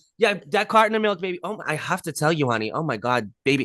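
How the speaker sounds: put-on Long Island accent persona voice. Retelling a medium checking out at the grocery store: imitating a Long Island medium. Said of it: "She's like".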